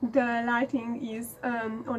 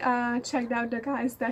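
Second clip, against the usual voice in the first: ordinary talk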